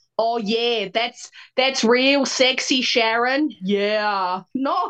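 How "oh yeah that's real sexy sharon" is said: mocking, unsexy put-on New Zealand accent, louder. Complaining that New Zealand porn isn't sexy, mocking an unsexy New Zealand accent. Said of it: "not somebody be like".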